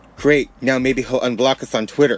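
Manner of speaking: plain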